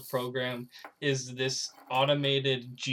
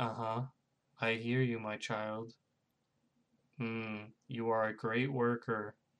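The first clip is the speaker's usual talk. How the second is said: put-on flat monotone, much quieter and slower; 2 semitones lower, 6 dB quieter than usual. Describing someone who doesn't listen, mimicking his reply, imitating a monotone voice. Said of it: "talks to you in a very monotone voice".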